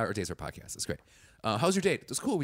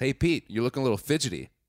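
put-on catty voice; 4 dB louder than usual. Retelling how the host greeted Peter: imitating Chris. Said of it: "instantly Chris goes".

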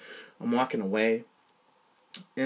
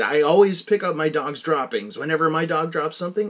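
ordinary talk, nothing marked

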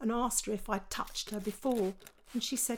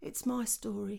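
very quiet, soft delivery; 4 dB quieter than usual. Retelling how a girl answered a question about her story: very quietly. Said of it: "she said very quietly".

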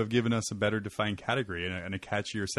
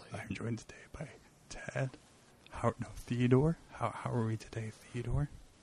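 soft, hushed, quieter and higher; 2 semitones higher, 9 dB quieter than usual. Opening a mock show, the host introduces his guest theodore, talking softly. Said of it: "Talk softly".

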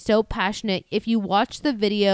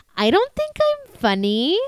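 high, sing-song, slow, drawn-out, swooping voice; 8 semitones higher than usual. Retelling what a porn star said when called funny: Lexi Bell voice. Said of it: "She goes in her Lexi Bell voice".

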